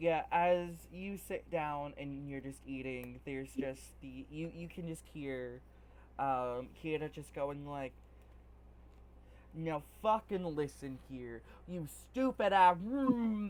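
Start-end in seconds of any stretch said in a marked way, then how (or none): 9.5-12.8 loud shouting tirade, yelling someone down. Voicing a character heard from another table while eating: yelling. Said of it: "If you keep yelling".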